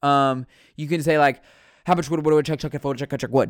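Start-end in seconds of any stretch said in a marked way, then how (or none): 1.8-3.5 fast, blurred words, syllables mashed into one stream. Showing how fast speech runs words together: very fast, blurred-together speech. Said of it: "that just kinda blurs it together".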